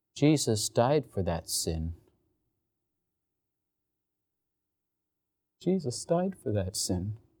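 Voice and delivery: low, soft, put-on trembling voice with heartfelt quaver. Retelling what a senior girl said to the speaker, imitating a quivering voice. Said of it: "with a quiver in her voice".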